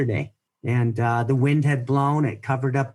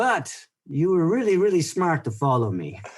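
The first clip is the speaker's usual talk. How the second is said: put-on French-accented English, swooping pitch; 4 semitones higher than usual. Retelling what a man they followed while lost said, imitating a French accent. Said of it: "in his French accent".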